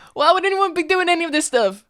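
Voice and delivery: very loud, high-pitched yell. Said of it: "Why are you yelling at me?".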